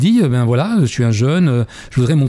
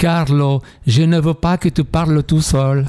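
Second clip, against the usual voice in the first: put-on Italian accent; 3 semitones higher than usual. Quoting his mother's complaint when she came into his room, with an italian accent. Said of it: "Avec l'accent italien".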